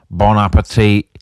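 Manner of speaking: put-on thick Salford accent. Retelling how he set down a plate and spoke, in the thickest Salford accent. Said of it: "in the thickest Salford accent ever".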